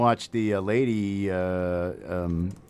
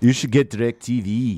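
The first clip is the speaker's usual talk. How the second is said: put-on New Zealand accent; 3 semitones higher, 5 dB louder than usual. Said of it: "that was equally bad".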